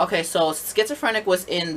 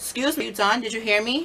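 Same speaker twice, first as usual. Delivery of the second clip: acted, very nice, professional, courteous, pitched-up tone; 6 semitones higher than usual. Retelling asking a customer a second time: imitating own polite tone. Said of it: "Very nice, very polite, very professional".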